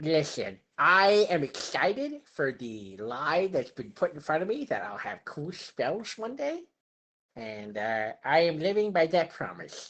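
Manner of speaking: put-on nerdy voice. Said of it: "I pulled out the nerd voice".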